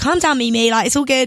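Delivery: ordinary delivery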